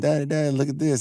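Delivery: put-on little girl voice, high scream, crying out. Retelling a little girl calling out to her father: imitating a child screaming. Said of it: "The daughter screams out to him".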